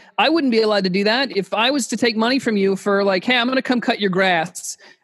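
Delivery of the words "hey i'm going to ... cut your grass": plain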